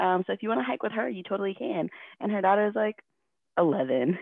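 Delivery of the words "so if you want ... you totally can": mock peppy tone, higher and quieter. Retelling what the group leader said after leaving her behind: imitating someone super peppy. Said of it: "super peppy".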